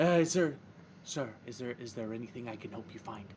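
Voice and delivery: speaking in a whisper. Voicing a halfling offering help in a library: whispering. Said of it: "than he whispered to me".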